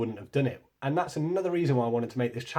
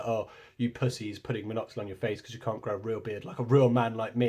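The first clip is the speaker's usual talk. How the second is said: normal talking voice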